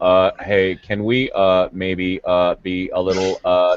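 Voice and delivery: low, halting put-on voice. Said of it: "you get Tim's voice going".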